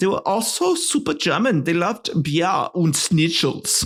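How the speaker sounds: fake put-on German accent. Narrating history about German officers, the speaker slips into a fake German accent. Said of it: "I love doing a fake German accent".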